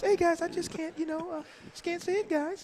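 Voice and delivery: very high, thin, faltering voice. Showing the others how Jared talks: high voice imitating Jared. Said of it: "he has that high voice".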